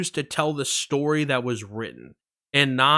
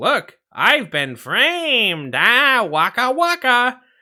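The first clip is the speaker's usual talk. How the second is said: high, loud comic voice, delivered slow; 9 semitones higher, 7 dB louder than usual. Showing the other speaker the Muppets' jokes: Fozzie Bear impression. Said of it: "My talent for impressions".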